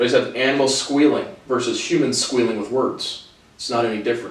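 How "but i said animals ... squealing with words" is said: ordinary talk, nothing marked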